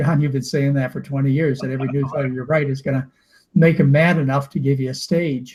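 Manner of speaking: plain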